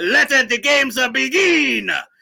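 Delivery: terrible put-on Italian accent, high, slow, drawn out. Pitching a movie ending, quoting the line: Russell Crowe in bad Italian accent. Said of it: "Russell Crowe in a bad Italian accent".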